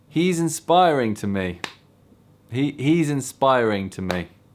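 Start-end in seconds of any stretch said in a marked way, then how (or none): 0.2-1.6 confident, self-assured, full of conviction. Saying the line again after being told to: said with confidence. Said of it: "Say it with confidence".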